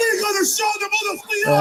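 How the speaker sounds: loud, rousing rallying shout.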